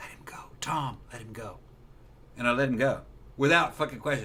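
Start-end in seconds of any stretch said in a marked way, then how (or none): 0.0-1.6 soft, gentle whispered feminine voice. Recounting a fight, quoting a woman who told him to let go, in a soft feminine voice. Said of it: "with a soft, feminine voice".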